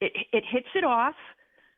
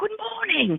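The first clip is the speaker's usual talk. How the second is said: put-on British accent, very high pitch; 11 semitones higher, 3 dB quieter than usual. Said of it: "a British accent".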